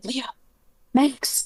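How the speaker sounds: shouting under breath. A player's character calls out for two others under her breath: whisper-shout. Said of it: "kind of whisper, shout for Leo and Max".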